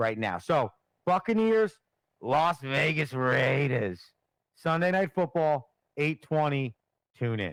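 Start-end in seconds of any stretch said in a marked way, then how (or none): 1.1-7.5 slow, sportscaster-style promo announcer voice. Closing a football discussion, doing a Chris Berman impression. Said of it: "What What is that voice?".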